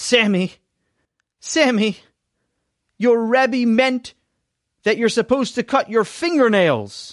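exasperated tone. Reading a story aloud, voicing a father correcting his son: exasperated tone. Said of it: "in an exasperated tone of voice".

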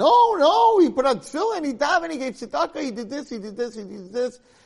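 shrill, very high-pitched, loud, protesting scream. Telling a story where the mitzvahs defend a man before the court, screaming. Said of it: "all the mitzvahs start screaming".

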